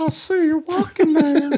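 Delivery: put-on very high, whistly, creepy old-man grandpa voice. Joking about a killer as a dirty old grandpa: whistly dirty old grandpa voice. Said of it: "the whistle in his voice".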